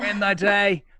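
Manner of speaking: put-on high-pitched, loud Boston accent. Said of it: "he speaks in a, uh, a Bostonian accent".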